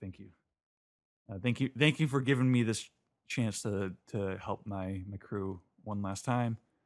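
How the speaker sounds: ordinary delivery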